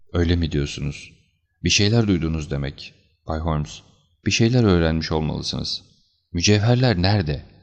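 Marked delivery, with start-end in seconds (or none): none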